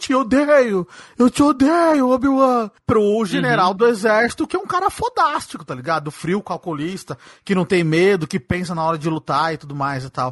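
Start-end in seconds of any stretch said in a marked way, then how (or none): 0.0-2.7 high, drawn-out spoiled-brat screaming yell. Discussing the Obi-Wan series and the spoiled boy in the fire, imitating Anakin shouting. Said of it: "ficou no fogo gritando".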